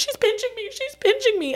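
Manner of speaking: put-on, very high, sobbing, crying voice. Retelling a girl's outburst in a witch-trial courtroom: imitating Abigail Williams crying. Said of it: "and crying and crying".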